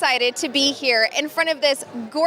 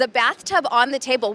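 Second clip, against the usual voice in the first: plain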